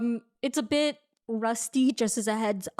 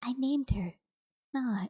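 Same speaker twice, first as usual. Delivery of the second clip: slow half-whisper under the breath; 5 dB quieter than usual. Voicing a character who puts down her cup: half-whispering to herself. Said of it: "she just whispers to herself".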